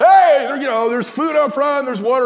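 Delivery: put-on shout. Telling how a man offered food, then acting him out, retelling someone shouting. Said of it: "he starts shouting".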